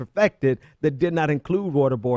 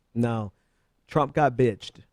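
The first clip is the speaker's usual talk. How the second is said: ordinary delivery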